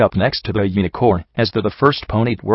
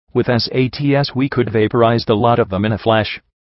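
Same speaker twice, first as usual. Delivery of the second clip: plain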